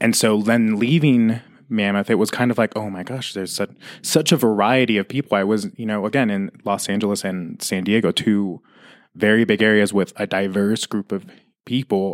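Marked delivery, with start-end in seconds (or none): none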